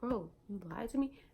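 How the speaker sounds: ordinary delivery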